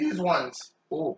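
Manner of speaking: voice breaks mid-word on ooh. Explaining which pieces cook fastest and need watching, voice cracking mid-sentence. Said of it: "my voice cracked".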